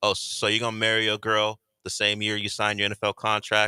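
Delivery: ordinary delivery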